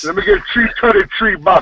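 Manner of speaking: put-on thick, laid-on Jamaican accent. Imitating a rude lottery customer ordering numbers: imitating a thick Jamaican accent. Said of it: "he had a thick Jamaican accent".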